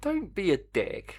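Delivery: high, sarcastic put-on voice. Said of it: "You're being sarcastic".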